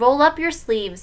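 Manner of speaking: ordinary delivery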